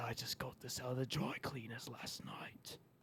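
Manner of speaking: very quiet, hoarse, raspy whisper. Offering an impression, the speaker does a whispered Jason Statham impression. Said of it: "Does he whisper like that?".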